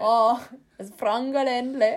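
Southern German accent with trilled, rolled R. Asked to say one word in that accent: rolled-R Southern German accent. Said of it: "Can you say one word where you roll your R in with, like, that accent?".

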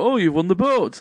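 dry, sarcastic put-on game-show host voice. Retelling a game show host's quips: imitating a sarcastic host. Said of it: "loads of sarcastic answers".

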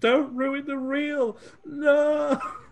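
put-on excited screaming. Retelling a woman's reaction while watching a film together, imitating excited screaming. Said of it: "she was really excited, screaming, going".

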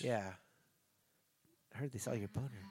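put-on whisper. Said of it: "if you stop whispering at me".

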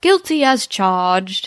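put-on British accent. Retelling a favorite Bob moment where he plays a barrister: Bob in a British accent. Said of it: "And in a British accent".

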